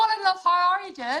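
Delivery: put-on full Northern Irish accent, very high, very loud. Retelling greeting a driver in the pits: full northern irish accent. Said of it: "in this full Northern Irish accent".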